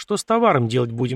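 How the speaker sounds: plain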